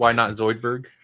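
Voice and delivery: ordinary delivery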